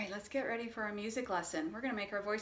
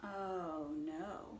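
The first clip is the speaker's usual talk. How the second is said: low-pitched voice, lower and quieter; 4 semitones lower, 6 dB quieter than usual. In a call-and-response story game, giving the 'oh no' reply: low-pitched voice. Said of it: "you use a low-pitched voice".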